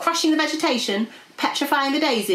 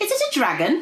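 exclaiming, crying out in a high voice; 7 semitones higher than usual. A character sees a monstrous beast eating a tree, crying out. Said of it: "Cried Arthur".

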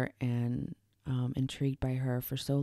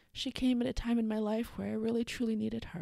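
emotional and moved, much higher; 10 semitones higher than usual. Remembering a best friend on the episode, the speaker is getting emotional. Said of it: "This is probably going to be an emotional episode".

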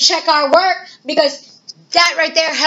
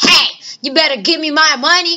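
acted rude tone. Showing how not to ask for change: acting rude demand. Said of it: "But don't be rude".

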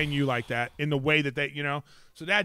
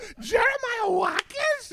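very high, awed, starstruck gushing voice. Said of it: "she said it like you were fucking [name]".

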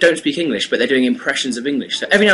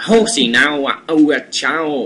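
put-on mock Chinese accent. Showing how people do an impression of a chinese person: put-on chinese accent impression. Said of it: "and then Chinese would be like".

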